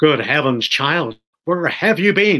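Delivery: cross, reproachful, rather angry, scolding. A father greets his child who has been missing, rather angrily. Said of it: "said Mr. [name], rather angrily".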